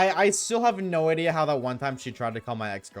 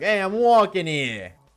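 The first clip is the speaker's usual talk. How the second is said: put-on New York accent; 9 semitones higher, 8 dB louder than usual. Joking about being from New York: put-on New York accent. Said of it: "I'm from New York".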